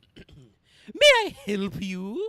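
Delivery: extravagantly flamboyant, loud, swooping character voice. Playing a new character answering a caller, in a very flamboyant voice. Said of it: "summon up a very flamboyant voice for this".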